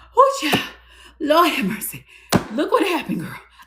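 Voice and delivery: play-acted out of breath, thrilled, swooping, excited gush. Acting out a friend coming up to hug you, out of breath and excited. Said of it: "let me catch my breath".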